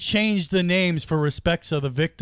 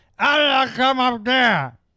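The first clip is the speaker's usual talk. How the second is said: put-on drunk lady voice, higher, louder; 9 semitones higher, 5 dB louder than usual. In an improvised Uber scene, speaker plays the drunk lady: acting drunk. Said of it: "I am the drunk".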